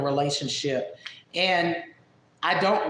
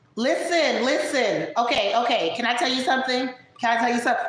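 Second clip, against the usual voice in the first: very loud, insistent woman's voice, pitched high; 6 semitones higher than usual. Asked to imitate someone, imitating Jessica Messica. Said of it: "She loud as hell".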